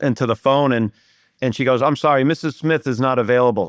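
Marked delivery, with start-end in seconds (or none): none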